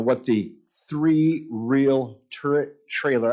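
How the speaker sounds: slow, careful delivery, each word deliberately spelled out. Introducing a piece of equipment with a tongue-twister name, saying it slowly. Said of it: "I'd say that slowly".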